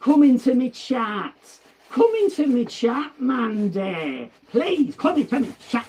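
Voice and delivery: mock loud, high-pitched two-year-old shouting. Retelling the brother's shout begging Mandy to join his chat: imitating someone shouting. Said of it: "he was shouting".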